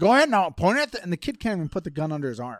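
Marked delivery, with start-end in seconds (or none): 0.0-1.0 put-on loud, pitched-up country accent. Retelling a story, speaker quotes a man coaching a small boy, in a redneck accent. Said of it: "this guy with this redneck accent is like".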